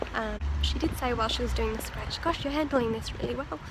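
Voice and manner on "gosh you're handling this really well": normal talking voice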